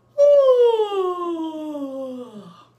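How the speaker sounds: yawning with voice. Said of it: "don't fall asleep on me".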